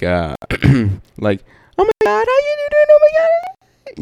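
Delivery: weird, very high, swooping, drawn-out sing-song voice. Imitating chicks greeting someone they haven't seen in forever: mocking weird high-pitched voice. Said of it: "their voice just goes into this weird high pitch".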